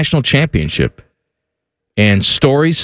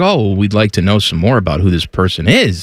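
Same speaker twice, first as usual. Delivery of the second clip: ordinary talk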